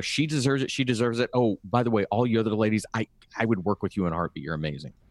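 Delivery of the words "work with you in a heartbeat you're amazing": normal talking voice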